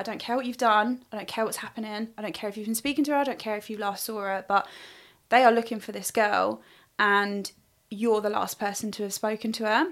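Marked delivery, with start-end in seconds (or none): none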